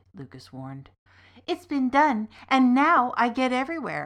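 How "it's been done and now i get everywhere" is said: loud, high, joyful, delighted cry. Answering a pilot's warning, a companion cries out happily. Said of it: "Nightingale cried happily".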